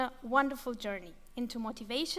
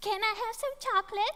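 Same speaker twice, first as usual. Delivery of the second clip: put-on sweet, very high little child voice; 9 semitones higher than usual. Describing a child asking before dinner, the speaker uses a put-on sweet child voice. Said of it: "the sweet voice".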